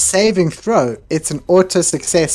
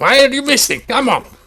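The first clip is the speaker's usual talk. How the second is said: very high-pitched yelling shout; 10 semitones higher than usual. A player's character, as a bonus action, yells at a companion. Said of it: "I will yell at Tobin".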